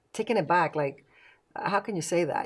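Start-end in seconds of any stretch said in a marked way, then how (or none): none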